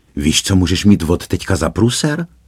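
ordinary delivery

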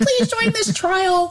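super high-pitched commercial voice. Imitating the voice from a radio ad about clinical trials: imitating a high-pitched ad voice. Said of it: "this high-pitched".

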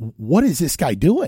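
ordinary talk

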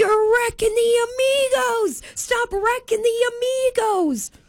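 shrill, very high screaming rant. Retelling how a sister screamed at a guy, retelling a scream. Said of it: "she's just screaming at this guy".

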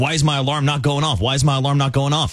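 put-on panicked voice. Retelling waking at four twenty with no alarm: retelling own panic. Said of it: "And I start, like, panicking".

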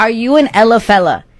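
normal talking voice

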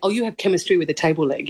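normal talking voice

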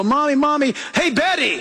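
put-on child voice, nagging and pestering, tugging. Describing how kids constantly call for their mom: imitating a child pestering mom. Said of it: "kids today go".

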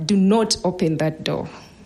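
usual speaking voice

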